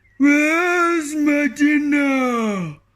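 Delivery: loud bellowing ogre roar, dinner drawn out. Reading a story aloud as the ogre steps out of the sea, roaring ogre voice. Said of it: "roared the ogre".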